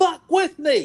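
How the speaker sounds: menacing yell, high, loud and slow.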